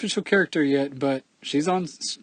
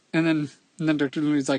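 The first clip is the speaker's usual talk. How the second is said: plain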